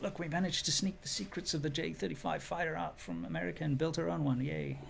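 very soft, hushed, under the breath. Acting out a country's announcement about building its own fighter jet, very quietly. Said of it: "you said that very, very quietly".

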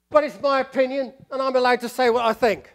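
slight East London accent. The speaker voices a take to be avoided; slight East London accent. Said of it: "that's with a sort of slightly East London accent".

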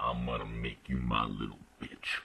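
extremely deep, low voice. Describing being born with way deep voice syndrome: very deep, low voice. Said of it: "I used to have a really deep voice. I used to sound like this".

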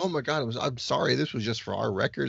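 ordinary delivery

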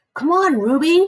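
high, near-pleading voice. A man pulls the chain of an elephant that refuses to move: almost pleading. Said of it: "Mac is almost pleading".

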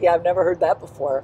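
dead level, no expression, acted deadpan. Retelling the potato chip guy's reply at the site survey, completely deadpan. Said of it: "he looked at me completely deadpan and said".

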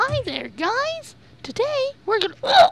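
very high, squeaky, swooping voice. A speaker imagines how Mickey Mouse would talk, doing a Mickey Mouse voice. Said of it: "I can just imagine Mickey Mouse like".

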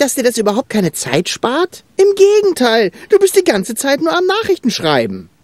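high, sweeping, cheeky reproachful tone.

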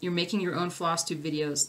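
normal talking voice

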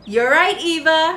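loud, hearty laughing while speaking. Narrator reading a grandfather's reply to eva, laughing heartily. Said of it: "her grandfather laughed heartily".

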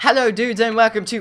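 put-on British accent, loud and high-pitched. Starting a video intro to others: british accent. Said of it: "crap, British accent".

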